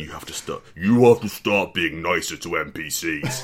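loud, electronically modulated voice-changer voice. Acting out a masked kidnapper's demand: voice modulator voice. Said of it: "it says through a voice modulator".

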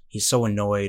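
ordinary delivery

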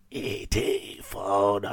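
low, soft, sick-sounding voice. Movie podcast co-host, sick with COVID, talking through COVID. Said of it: "That's me talking through my COVID".

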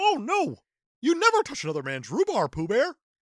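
high-pitched cartoon frog puppet voice. Doing the requested Pooh Bear and Kermit bit, as Kermit scolding Pooh: Kermit the Frog voice. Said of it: "your Pooh Bear and Kermit".

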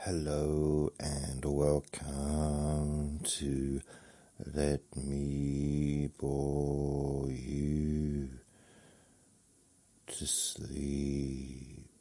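eerie ghost-like voice. Host opening the show, sounding like a ghost. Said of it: "That sounded more like a ghost".

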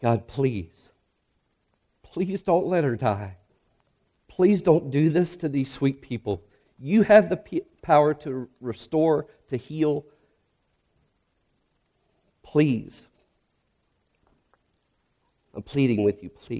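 put-on, desperate, repeated begging, pleading tone. Retelling a prayer outside an ER room, reenacting begging God. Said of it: "silently begging God".

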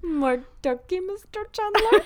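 very high, thick, put-on Dutch accent. Retelling a guy's line once more, a speaker uses a thick Dutch-sounding accent. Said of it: "Sounds a little bit like Dutch".

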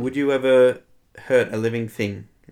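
ordinary delivery

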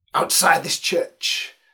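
mock-passionate preacher voice, put-on fervor. Retelling how a minister would stand and address his church, imitating a passionate preacher. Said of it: "say in a passionate tone".

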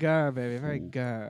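put-on British spy voice. Showing childhood impressions to the others: Austin Powers impression. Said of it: "I was obsessed with Austin Powers".

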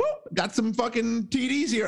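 high, slow, celebratory voice. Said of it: "Mister Crowder going".

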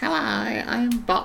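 very high, creaky, creepy voice. Recalling a puppet whose voice suddenly turned strange, in creepy, bizarre Bop voice. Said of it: "its voice suddenly changed and it became really creepy and bizarre".

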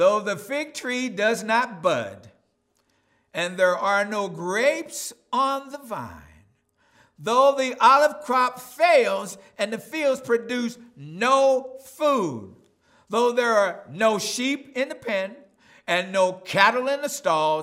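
slow, loud, high-pitched, solemn reading.

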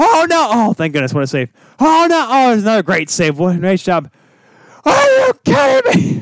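put-on excited fan screaming, shrill, swooping, building up. Retelling a live-streamed reaction to the game, imitating a screaming fan. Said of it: "he just starts screaming like".

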